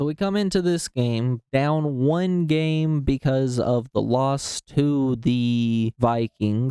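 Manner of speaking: talking really slowly. Recapping a football game for listeners, talking really slowly. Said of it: "I'm talking really slow".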